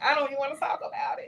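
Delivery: pitched very high, on the edge of crying. In an interview, asking everyone for a minute, holding back tears. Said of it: "Y'all gonna make me cry".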